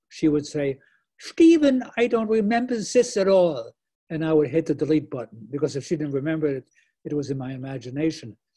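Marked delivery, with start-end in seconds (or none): 1.2-3.7 put-on German accent, pitched up, raised. Speaker retells his mother answering him, imitating her german accent. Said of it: "she had this great German accent".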